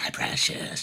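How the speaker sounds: breathy, whispered character voice. Retelling a wrestler's line in the ring, done as Gollum voice. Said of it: "everybody called him Gollum".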